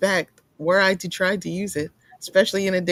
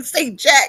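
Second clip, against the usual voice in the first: put-on angry dad voice, higher and louder; 7 semitones higher, 6 dB louder than usual. Imagining a friend's dad coming in about stolen gas: imitating an angry dad. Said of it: "he comes in angry and he's like".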